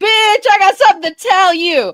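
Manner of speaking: very high, loud voice calling out to carry. Suggesting to the group how to say the line, calling across the room. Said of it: "let's use the voice you use when".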